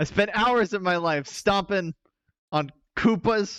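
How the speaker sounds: hard, aggressive, forceful delivery. Imitating how a card character says his line: imitating a very aggressive delivery. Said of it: "He says it very aggressively".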